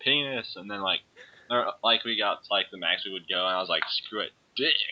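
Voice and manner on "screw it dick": put-on half-shouted blurt, reined-in holler. Retelling a line said in the library, imitating a loud shout. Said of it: "said that, like, really loud".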